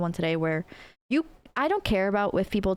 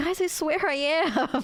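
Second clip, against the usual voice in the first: put-on cartoonish little anime voice, much higher; 9 semitones higher than usual. Recalling a friend answering the group's teasing, little anime voice. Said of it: "He had like a little anime voice".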